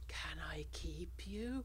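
really soft, very quiet hushed voice. Describing a needy character's line, imitating a really soft voice. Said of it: "in a really like soft voice".

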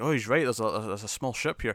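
plain

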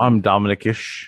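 put-on child voice with fake British accent. Retelling how a child showed off a British accent: imitating a child's fake British accent. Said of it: "you ready to hear my British, uh, accent?".

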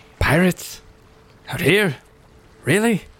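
tired, disbelieving sigh. The human leading the group looks up at the ship and speaks, sighing. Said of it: "just kind of sighs and goes".

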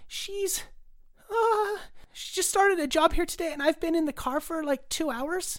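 put-on squeaky child voice. A child who came in alone answers who their mom is, squeaky child voice. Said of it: "the child lets out in a squeaky voice".

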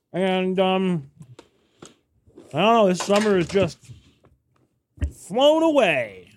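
high voice, talking through a mouthful of food. Podcast co-host answering the other host while eating: talking with mouth full. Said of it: "my mouth is full of animal crackers".

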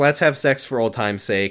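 ordinary talk, nothing marked

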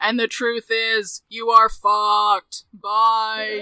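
solemn, slow, loud divine pronouncement voice.

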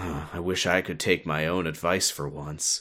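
put-on mumble. Recapping a scene where Riku walks out the door, Riku mumbling to himself. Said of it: "he mumbles to himself".

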